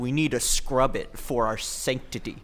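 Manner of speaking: ordinary talk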